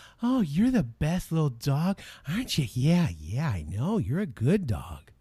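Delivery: sweet, sing-song, drawn-out cooing voice. Showing how people talk to a dog, in a nice voice for talking to a dog. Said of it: "nice voice to your dog".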